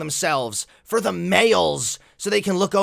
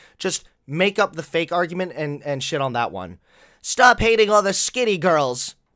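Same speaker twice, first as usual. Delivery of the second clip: ordinary talk, nothing marked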